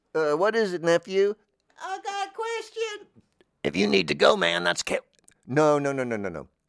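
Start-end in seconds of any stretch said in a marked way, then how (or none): 1.8-3.1 put-on, very high-pitched character voice. Faking a second caller in the studio: put-on nephew voice. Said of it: "I was just doing a voice".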